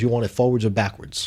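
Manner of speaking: aggressive, combative, challenging call-your-bluff tone. Retelling his drunk brother's reply when asked to do the alphabet, mock-aggressive challenge. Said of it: "Like aggressively".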